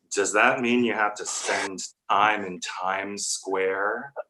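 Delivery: put-on disdainful tone. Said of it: "in that tone of voice".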